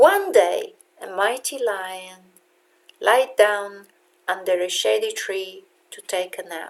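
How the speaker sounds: steady downward tune, high to low, ending on "nap". Teaching the falling music of english with an example sentence: pitch falling from high to low. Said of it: "This is the falling music of English".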